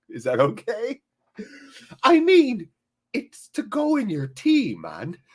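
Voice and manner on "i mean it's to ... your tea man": light Irish lilt, very high, slow, swooping. Repeating Owen's comment with a vaguely Irish flavor. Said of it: "put a vaguely Irish flavor on your quotes".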